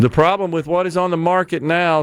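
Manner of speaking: ordinary talk, nothing marked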